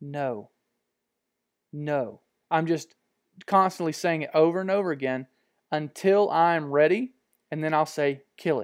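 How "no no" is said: whisper, much quieter. Recalling what they whisper when not ready during filming, whispering no repeatedly. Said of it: "all I'm whispering is no".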